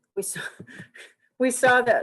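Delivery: giggly, laughter-broken speech. A lecturer on a video, amused by Zoom, keeps explaining: laughing while explaining. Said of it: "I'm laughing at these".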